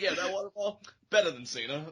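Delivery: play-acted smug, self-satisfied, boastful gloating. A speaker echoes the other speaker's boast back, mock-smug tone. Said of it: "you captured the smug tone".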